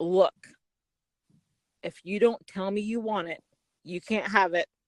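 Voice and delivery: mock deadpan, straight-faced, very low voice. Retelling the guy's line from a picnic scene: imitating a straight-faced delivery. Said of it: "he says this with a straight face".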